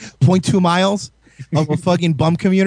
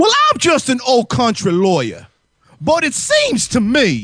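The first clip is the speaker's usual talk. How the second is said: put-on cartoon country voice, high, swooping, hammed up; 6 semitones higher than usual. Mid-discussion about a court case, launching into a Foghorn Leghorn voice. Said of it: "Froghorn Leghorn, you want to fucking speak with your real voice?".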